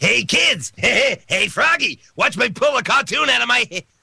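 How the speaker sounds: very high-pitched clown voice. Recalling a voice done for a past project, demonstrate the Krusty the Clown voice. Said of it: "it was like a almost a Krusty the Clown".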